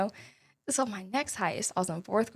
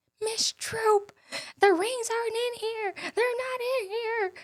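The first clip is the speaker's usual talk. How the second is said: very high, tearful crying wail; 14 semitones higher than usual. Retelling two girls throwing a fit to their teacher: imitating girls crying and screaming. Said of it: "And they're crying, they screaming".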